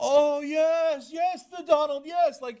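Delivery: very slow, high-pitched, drawn-out, deferential fawning. Imitating the press flattering Trump: imitating fawning press. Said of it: "How fawning and deferential the press".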